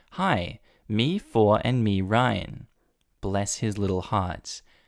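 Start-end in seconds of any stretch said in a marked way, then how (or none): none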